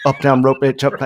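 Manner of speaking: loud, rapid-fire carny lingo, rattled off. Retelling a wrestler calling out moves in carny lingo, rapid-fire carny lingo. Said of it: "like real fast".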